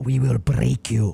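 slow, drawn-out, rough villain voice. Quoting the press secretary's statement, done as a Drago impression. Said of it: "that's Drago".

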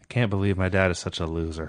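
very low, flat, listless, unenthused monotone drone. Trying to copy a line David Flair delivered, in a David Flair unenthusiastic impression. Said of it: "To imitate the lack of enthusiasm".

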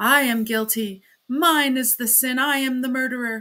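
out of breath, quite loud. A man suddenly kneels and confesses, breathless but fairly loud. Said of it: "rather breathless, but speaking fairly loudly".

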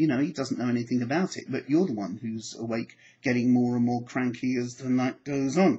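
plain

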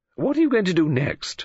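high, pressing, insistent, demanding tone. Narrator reading Mrs. Oliver questioning Poirot, demanding. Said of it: "Demanded Mrs. Oliver".

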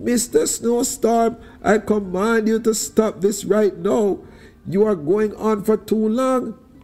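very high, commanding shout. Anansi shakes his fist at the howling snowstorm, shouting. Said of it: "shook his fist at the howling snowstorm and shouted".

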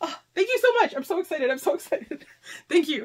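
emotional, near tears. Receiving books and thanking the givers, almost crying. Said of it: "I'm almost crying here".

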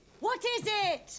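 shouting. A mother answers her child's calls, shouting. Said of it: "You're shouting!".

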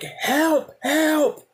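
mock, shrill, very high scream. Retelling being dragged by two dogs, acting out screaming for help. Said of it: "So I'm screaming".

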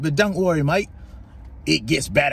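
put-on Australian accent. Narrating found footage of a crash, the speaker jokes in an Australian accent. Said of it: "that was a really good Australian accent".

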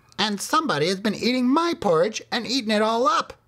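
tiny, very high-pitched crying. After the two bigger bears speak, the littlest bear cries out in Baby Bear's baby-sized voice. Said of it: "cried Baby Bear in his baby-sized voice".

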